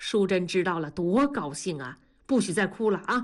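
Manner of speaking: ordinary delivery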